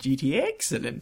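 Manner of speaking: fake, sinister, evil villain voice. Addressing Christopher, in a mock-evil cat-stroking villain voice. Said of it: "I was stroking my cat evil".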